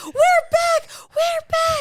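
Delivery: put-on screaming. Retelling running upstairs and finding another person screaming: imitating someone screaming. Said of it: "hearing him screaming".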